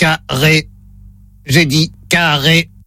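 flat, low, monotone machine robot voice. During a hearing test, the robot says the word to repeat, robot voice. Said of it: "Voix de robot enclenchée".

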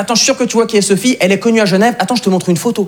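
normal talking voice

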